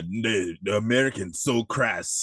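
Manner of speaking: slow, put-on Jamaican accent. Retelling a character's line from a scene: imitating a fake jamaican accent. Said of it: "With that fake ass Jamaican".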